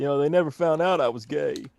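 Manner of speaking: put-on southern accent, politician-style voice. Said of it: "my bad Bill Clinton impression".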